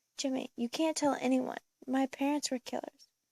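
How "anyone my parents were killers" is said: plain reading voice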